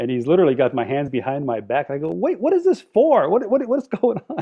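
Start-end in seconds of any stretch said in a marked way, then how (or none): 2.1-4.4 shrill, very high fake confusion, stammered. Retelling being arrested in a prank, imitating his own acted confusion. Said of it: "I shoulda won an Oscar".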